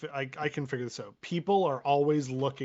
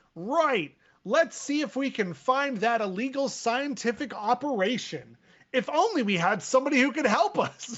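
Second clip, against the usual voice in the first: loud, very high, proclaiming declaiming voice; 11 semitones higher, 5 dB louder than usual. Speaking as his character during a shared story, making a loud proclamation. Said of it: "I loudly proclaim".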